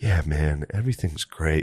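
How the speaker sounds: soft, flat, dead-level droning monotone. Retelling hallucinating while Butterly talked, imitating Butterly's monotone. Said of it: "Like this real monotone thing".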